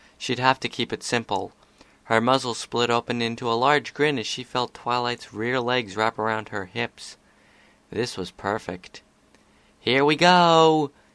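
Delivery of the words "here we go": loud, raised shout. She calls out as she tips forward with a companion holding on: shouted. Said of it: "she shouted".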